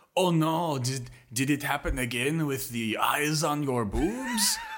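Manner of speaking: put-on, high, sing-song, drawn-out French accent. Retelling what a friend says on walking into the apartment, in a French accent. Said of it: "a better French accent than literally anybody in this".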